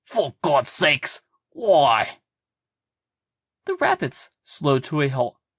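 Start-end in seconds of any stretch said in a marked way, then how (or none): 0.1-2.1 slow, angry, insistent delivery. Reading a story where a character demands an answer: angry demand. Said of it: "Sully demanded angrily".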